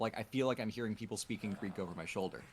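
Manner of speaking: normal talking voice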